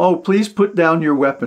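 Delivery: ordinary delivery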